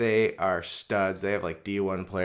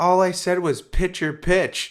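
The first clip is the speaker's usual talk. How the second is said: very high, loud, shrill, indignant yell; 12 semitones higher, 9 dB louder than usual. Speaker retells a man's retort to a coach who yelled at him; retelling a yell. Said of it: "He like yelled at him".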